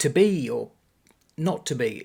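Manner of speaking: "to be or", then long pause before "not to be". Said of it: "But Andrew Scott's going".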